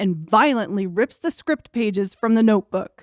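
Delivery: ordinary delivery, nothing marked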